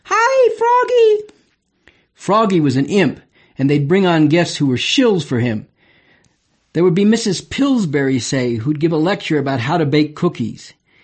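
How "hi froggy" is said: put-on very high little-kid voices in chorus. Recalling a kids' TV show, imitating the children greeting the frog puppet, in high-pitched kids' voices. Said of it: "in their high-pitched voices".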